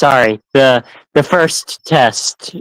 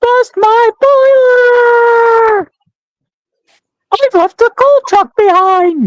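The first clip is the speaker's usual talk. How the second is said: very high train engine voice, "boiler" drawn out; 3 dB louder than usual. Voice actor replaying a line from their role, in the Thomas voice. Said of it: "Your Thomas voice".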